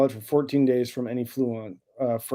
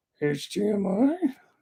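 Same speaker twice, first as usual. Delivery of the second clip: poorly done creature voice, pitched up high; 8 semitones higher than usual. Delivering the punchline of a joke about Master Yoda: Yoda voice. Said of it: "in Yoda voice".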